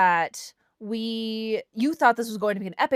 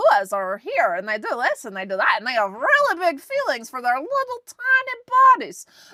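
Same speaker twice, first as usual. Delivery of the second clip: raised short-video voiceover narrator voice; 4 semitones higher, 5 dB louder than usual. Imitating a reels video narrator the audiobook reader sounds like: imitating a social media reels narrator. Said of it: "That's what I heard the entire time".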